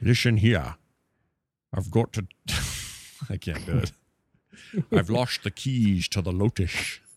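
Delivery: Scottish leading-man voice, put-on. Asked for a Scottish voice on the show, Sean Connery impression. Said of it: "It's my Sean Connery".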